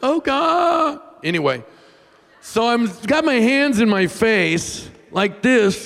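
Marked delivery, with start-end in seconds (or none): 0.0-1.0 mock high whiny baby voice, "God" drawn out. Showing how own prayers sound: imitating own whiny prayer. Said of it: "I whine".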